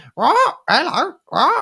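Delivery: very high, loud, squawky parrot voice. Retelling reading a book aloud and doing all the voices, squawking parrot voice. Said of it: "there's this parrot that talks, so I go and go".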